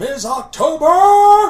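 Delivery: big commanding bellow, very high and loud. Calling out again in character, louder: bellowing in a much larger command voice. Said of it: "I bellow in a much larger command voice".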